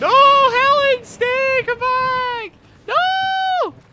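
shouting with excitement. Streaming, calling someone back to stay, shouting excitedly. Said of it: "I'm sorry for shouting".

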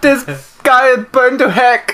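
loud, very high-pitched, put-on German accent. Speaker retells a story about a badly burned student, attempted german accent. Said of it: "German is what I was thinking".

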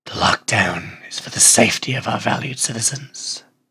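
very gruff, slow, deliberate delivery. Narrator reading the watch captain's quoted statement, in a super gruff voice. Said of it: "I'm going to go for super gruff voice for this".

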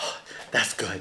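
breathy, whispered voice. Imitating Clark Griswold as he scoops and tastes: Clark Griswold impression. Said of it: "He was like, he scoops it, he's like".

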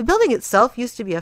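plain reading voice

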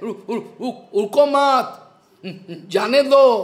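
very slow, stammering, words run together without pause. Demonstrating a hindi phrase in a lesson on wrong pronunciation, stammering. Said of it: "is stammering".

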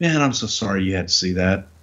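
acted deflated, resigned voice, fight gone out. Retelling how John dropped his shoulders and apologized: imitating a deflated apology. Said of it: "puts his shoulders down and goes".

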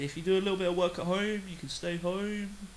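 bad, clumsy put-on woman's voice, sounding mannish. Quoting what the speaker's mum said about staying home: bad impression of mum's voice. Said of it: "That was a really bad impression of my mum's voice, sound like a man".

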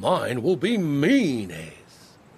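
slow, drawn-out, loud, boastful growl. Narrator reads the third of several bragging brothers: growled. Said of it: "growled the third brother".

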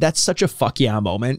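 ordinary talk, nothing marked

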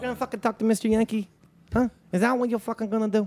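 playful fake New York accent. Taunting someone in a fun little new york accent. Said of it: "thanks for doing a fun little New York accent".

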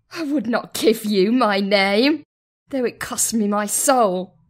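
very high-pitched, fierce snarl. A narrator voices the battle sister's reply, snarling. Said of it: "the battle sister snarled".

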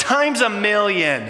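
high-pitched emphatic exclamation. Retelling his wife's reply after he said ouch, with a raised voice. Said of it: "She raised her voice and said".

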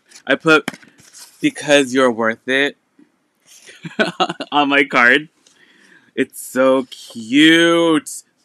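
loud, slow laughing talk, cutely stretched words. Showing off a card written to oneself in an order: cracking up. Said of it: "I'm cracking up".

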